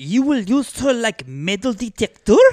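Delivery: very high-pitched French father voice. Acting out Jules answering Deschamps in a skit: Jules voice. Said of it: "convinced Jules to let him borrow Juliet".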